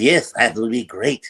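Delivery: hammy, loud cartoon walrus voice. Showing the voice of a walrus character from a show: walrus character voice. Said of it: "he sort of talked like this".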